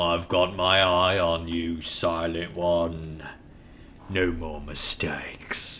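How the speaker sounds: low, menacing, threatening voice.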